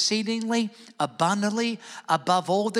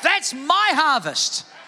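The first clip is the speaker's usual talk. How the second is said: loud, high-pitched shout. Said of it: "Like, yell, like you're trying to get someone's attention".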